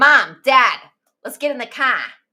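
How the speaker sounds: put-on Boston accent. Retelling how Anthony talked after speech therapy: Anthony's Boston accent. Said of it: "produced a Boston accent".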